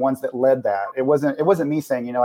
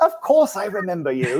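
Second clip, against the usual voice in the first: warm voice with raised pitch; 6 semitones higher than usual. Retelling a phone call, imitating Oliver answering: imitating Oliver. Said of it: "That is a good imitation".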